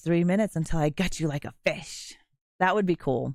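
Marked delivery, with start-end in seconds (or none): 0.0-2.1 smart-speaker voice turned sinister, like a horror-film killer. Imagining features for an AI assistant, answer the timer request in Ghostface voice. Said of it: "Alexa in Ghostface voice".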